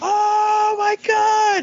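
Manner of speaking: acted, shrill, very high, thrilled fan shriek. Convention story about a fan meeting a voice actor, retelling a fan's excited scream. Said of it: "he just starts screaming like".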